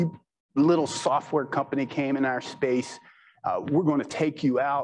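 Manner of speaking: plain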